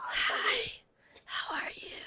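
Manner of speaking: whispery, little mouse-like voice. Retelling how you greeted someone right after landing, talking like a mouse. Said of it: "were you talking like a mouse?".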